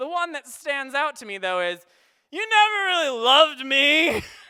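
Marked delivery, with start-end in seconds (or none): 2.3-4.2 put-on mock-drunk voice, louder and slower. Retelling what he shouted outside while the speaker listened, imitating a loud drunk voice. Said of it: "I hear the drunk voice is very loud".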